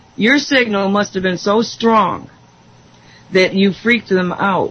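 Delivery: ordinary talk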